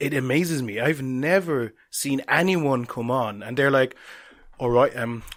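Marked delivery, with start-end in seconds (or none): 4.6-5.2 put-on English accent from Britain. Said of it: "I don't know why I did that accent".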